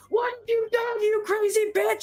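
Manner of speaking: mock, very high, shrill shrieking scream. Retelling a car crash, the rest of the car screaming at the speaker, imitating the screams. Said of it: "the rest of the car is screaming at me".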